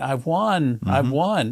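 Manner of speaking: imitated screaming voice. Retelling a lady winning the slot jackpot: imitating someone screaming. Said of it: "And she was screaming".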